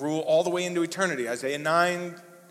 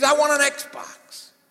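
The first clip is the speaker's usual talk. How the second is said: put-on very shrill, slow, loud, drawn-out child scream; 7 semitones higher, 4 dB louder than usual. Telling a funny story about a boy's loud prayer to a listener, acting out his demands, imitating a child screaming. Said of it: "he screams".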